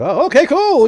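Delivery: high, loud, casual crowd voices.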